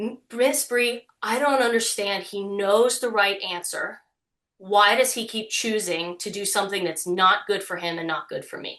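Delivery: words pushed out through tears, tearful crying. Retelling what a sixteen-year-old girl said through tears: imitating someone crying. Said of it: "through her tears".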